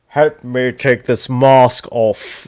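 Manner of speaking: put-on slow, loose, sort-of British deep villain accent. Quoting the unmasked Vader's line: Britishy Vader accent. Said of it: "in a, like, a Britishy kinda accent".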